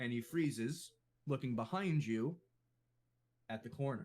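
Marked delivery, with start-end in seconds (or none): none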